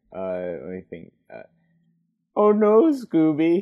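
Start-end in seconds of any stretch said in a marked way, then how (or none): 2.4-3.7 very high, loud, squeaky cartoon voice. Asked on a podcast how his Shaggy is, doing a Shaggy impression. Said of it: "How's your Shaggy?".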